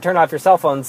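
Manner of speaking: normal talking voice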